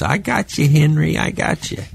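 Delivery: shrill, high-pitched voice. Retelling what Mr. Rupp said during the game, in Mr. Rupp's high shrill voice. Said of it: "had a real high, shrill voice".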